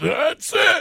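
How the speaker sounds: very high, sudden, loud high-pitched yell. Retelling jumping out of bed to chase a three-year-old, retelling own loud yell. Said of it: "And I yelled it really loud".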